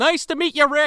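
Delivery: high, mock-friendly, put-on friendly tone.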